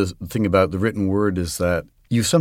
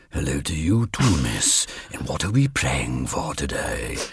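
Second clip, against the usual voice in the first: deliberate, slow character voice, every word drawn out; 7 semitones lower, 5 dB quieter than usual. Showing a way to voice Death in a story reading: Vincent Price voice. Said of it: "you can make him Vincent Price".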